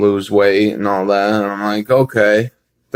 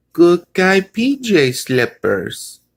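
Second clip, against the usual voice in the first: put-on cute little voice, much higher, slower; 8 semitones higher than usual. Retelling Randy's reply to a question, imitating Randy's cute little voice. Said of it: "he says in his cute little voice".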